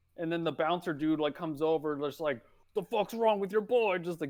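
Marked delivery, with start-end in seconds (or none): 2.8-4.0 acted-out angry, pissed-off voice, pitched up. Retelling a strip club bouncer coming over: imitating an angry bouncer. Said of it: "getting all pissed".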